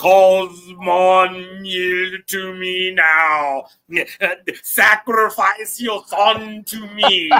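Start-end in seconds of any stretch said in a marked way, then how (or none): 1.6-7.4 big, slow, drawn-out, thundering voice. Retelling what the voice of thundering waters said, in a big thundering voice. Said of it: "that big voice ... the voice of a thundering waters".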